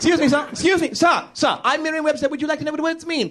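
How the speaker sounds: very high, plucky, spunky tween voice full of moxie. Acting out a spunky Victorian tween greeting strangers: Merriam-Webster as spunky Victorian tween. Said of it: "an industrious tween walking around Victorian England".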